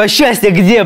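loud, high-pitched, almost aggressive demanding tone. Retelling running up to him between takes: retelling an almost aggressive question. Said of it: "Прям вот с такой интонацией".

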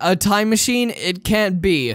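normal talking voice

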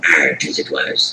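very slow pirate drawl. Answering another speaker about having fun last night: pirate voice. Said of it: "You can stop talking like that now".

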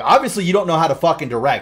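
mock yelling. Retelling how he yelled at the director: imitating someone yelling. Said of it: "He's yelling at the director".

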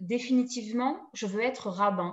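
ordinary delivery

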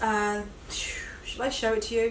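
soft, unvoiced whisper.

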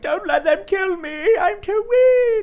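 very high, slow, loud, feigned feeble whine.

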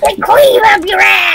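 high-pitched, drugged-sounding toad voice. Speaker tries the toad voice he says he used to do: toad voice. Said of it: "You sound like a toad on drugs".

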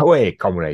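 put-on Geordie accent with Russian flavour. Joking about a half russian, half geordie woman: put-on russian geordie accent. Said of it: "I can't do either of those accents".

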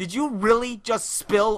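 shrill, loud, furious outburst from outraged woman. Speaker recounts a lady whose shoe got splashed, imitating her flipping out. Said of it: "the lady flipped the fuck out".

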